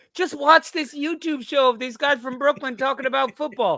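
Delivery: shouting. Imagining a friend yelling from his prison cell: imitating someone yelling. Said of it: "Ben yelling from his prison cell".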